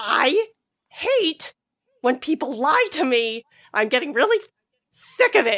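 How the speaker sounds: wronged, indignant, accusing tone. Recapping a scene, the speaker acts out a woman confronting a man: mock-indignant. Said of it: "She like indignantly gets up".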